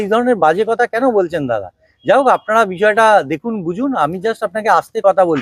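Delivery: ordinary talk, nothing marked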